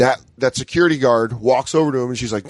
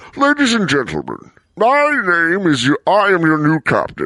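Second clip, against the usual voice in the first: swooping, comic-book masked supervillain voice; 4 semitones higher than usual. Joking about taking over a plane's speakers, in a Bane voice. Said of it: "with the Bane voice".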